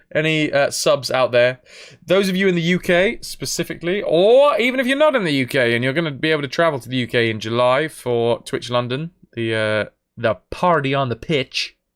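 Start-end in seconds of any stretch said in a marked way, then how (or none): 10.1-11.7 American accent, put on. Announcing a Twitch London party for subscribers: American accent. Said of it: "Don't know why I did that in an American accent".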